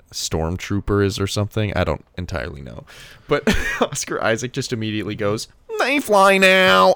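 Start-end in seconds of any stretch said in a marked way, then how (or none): 5.7-6.9 put-on very high, loud, jeering mocking voice. Retelling someone's instant answer to a stormtrooper question, retelling a mocking line.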